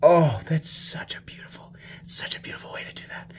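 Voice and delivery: marvelling, hushed, soft, breathy whisper. Admiring the frame lock construction up close, whispering. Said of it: "I don't know why I'm whispering".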